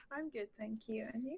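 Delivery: very quiet, timid, nervous delivery. Just introduced on a call, the speaker answers a greeting in a nervous, very quiet voice. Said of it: "I'm probably speaking very quietly".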